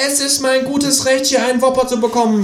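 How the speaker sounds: high, indignant, snorting kangaroo voice.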